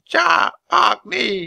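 very high, rasping, creaky raven-like croak. Reading a story aloud, the narrator voices a caged raven, croaking like a raven. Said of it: "the raven croaked".

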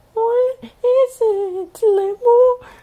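very high, very slow, frightened cry. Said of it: "she cried".

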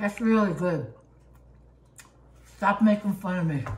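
talking with mouth full of food. Tasting hot food, talking with mouth full. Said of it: "You'll talk with your mouth full".

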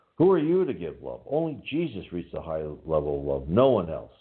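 voice lifted a touch. Retelling what a man said to the counselor medium, in a loud voice. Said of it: "he said in a loud voice".

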